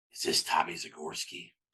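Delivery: raspy, breathy voice in a whisper. Recounting a phone call at his desk, the speaker imitates Butch Jones's raspy voice. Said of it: "and it's this raspy voice".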